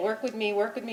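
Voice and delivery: ordinary talk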